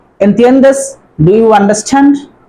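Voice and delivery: ordinary talk, nothing marked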